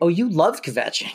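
plain

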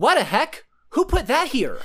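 put-on high five-year-old boy voice. Retelling something Cooper said at five or six: imitating Cooper as a young child. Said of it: "I'm gonna do an impression of one of the funniest things I've ever heard Cooper say".

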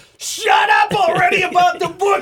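very high, loud, drawn-out screaming shriek. Retelling a radio clip where a cohost finally snaps: imitating McCord screaming. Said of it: "McCord just starts screaming at him".

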